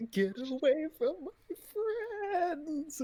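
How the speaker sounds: very high, rising, dramatic anime-style shout. Voicing a character charging an enemy: cliche anime shout. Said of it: "cliche, like, anime shouting".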